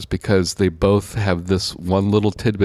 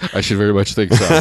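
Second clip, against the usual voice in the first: ordinary talk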